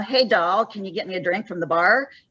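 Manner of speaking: ordinary talk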